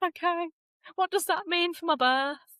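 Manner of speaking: high, tearful, put-on crying voice. Speaker retelling a phone call at work about a diagnosis, retelling tearful words. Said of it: "And then I'm crying on the phone at work".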